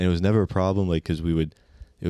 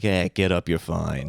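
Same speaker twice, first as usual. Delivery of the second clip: slight put-on Boston accent. Retelling what a grandma said to the bleeding speaker, in a slight Boston accent. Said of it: "like a little Boston kind of accent".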